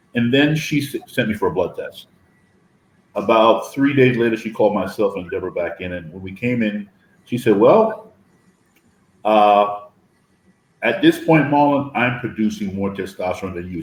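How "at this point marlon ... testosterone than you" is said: ordinary talk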